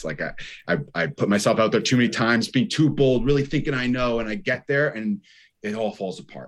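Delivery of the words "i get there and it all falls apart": ordinary talk, nothing marked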